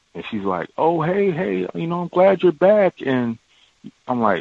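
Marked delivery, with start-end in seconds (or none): 0.7-3.0 cheerful, happy voice at a higher pitch. Retelling a coworker greeting them on their return, imitating someone sounding happy. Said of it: "Why are you sounding so happy like this?".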